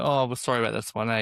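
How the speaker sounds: ordinary talk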